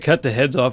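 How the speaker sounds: usual speaking voice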